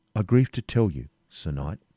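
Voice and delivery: ordinary talk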